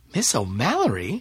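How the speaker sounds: usual speaking voice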